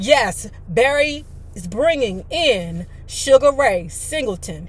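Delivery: ordinary delivery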